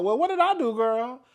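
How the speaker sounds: high, mock faux-innocent, playing-dumb tone. Mocking someone who acts stupid about a fight: mocking someone playing dumb. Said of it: "you wanna act like".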